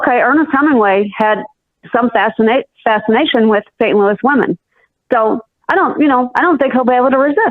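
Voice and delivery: ordinary talk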